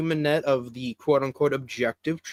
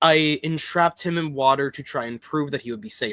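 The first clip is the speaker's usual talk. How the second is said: ordinary talk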